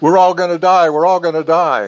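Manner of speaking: high, loud, repeated shrieking scream. Retelling women screaming as a building collapsed: imitating women screaming. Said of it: "they were screaming".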